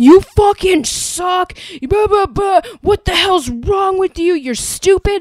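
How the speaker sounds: shrill, loud, belligerent, raging screaming. Retelling a fan's dad screaming in the speaker's face across a table, retelling a man's screaming. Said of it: "legitimately screaming".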